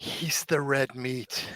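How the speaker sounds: very slow, hushed whisper, as if close to the ear. Leaning over to a fellow player's ear: whispering. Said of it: "whisper in Charlie's ear".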